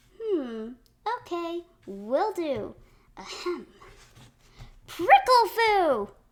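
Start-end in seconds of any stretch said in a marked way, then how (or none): 4.9-6.1 loud, high belted-out shout. Trying out yelling after being told to belt it out: belting out a shout. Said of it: "Just belt out whatever comes to mind".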